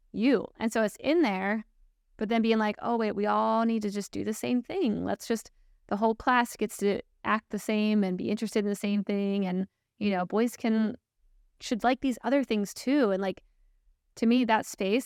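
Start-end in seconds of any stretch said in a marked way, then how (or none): none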